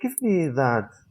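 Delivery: friendly, courteous, nicer polite tone. Explaining politeness without please, saying give me that in a nicer, polite tone. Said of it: "you just say it in a nicer way".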